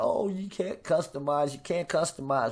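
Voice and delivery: normal talking voice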